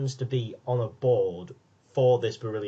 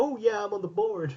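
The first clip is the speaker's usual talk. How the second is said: very high, hasty, slapdash put-on American accent; 9 semitones higher than usual. Retelling what she said in the ambulance about being on the board, slapdash american accent. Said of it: "was that your American accent?".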